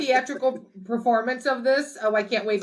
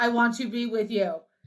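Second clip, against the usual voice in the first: mock, flat monotone delivery. Imitating the film's voice-changer caller saying the line: imitating a flat delivery. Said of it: "It is so flat".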